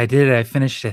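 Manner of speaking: exhausted, drained, worn-out voice. Player acting out their character leaning on a companion after finishing the inscription, exhausted, barely standing. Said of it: "I can barely stand".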